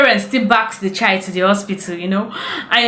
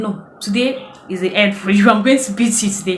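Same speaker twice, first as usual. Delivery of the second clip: usual speaking voice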